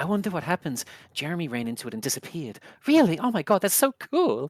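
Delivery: put-on hushed whispering by children. Voicing children in the game, whispering to each other: children whispering. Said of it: "As the whispering".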